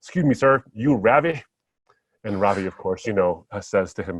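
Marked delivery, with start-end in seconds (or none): 0.0-1.4 put-on very thick, heavy Southern accent, laid on. Retelling a stranger's question at a barbecue joint in Texas: very thick Southern accent. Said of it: "in a very thick Southern accent said".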